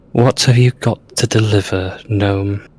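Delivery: hushed, quiet tones. The game narrator voicing a woman as she approaches a gnome, in hushed tones. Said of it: "it's very hushed tones".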